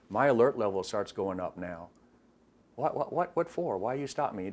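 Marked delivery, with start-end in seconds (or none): 2.7-4.5 put-on bewildered, fake-innocent deflecting tone. Imitating a stopped driver asked for a license: imitating someone playing dumb. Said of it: "they play dumb".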